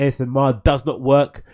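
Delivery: plain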